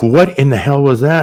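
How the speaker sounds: put-on alarmed, startled, freaked-out blurt. Retelling being hit by something through the car window: retelling own freaked-out reaction. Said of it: "I'm totally freaking out".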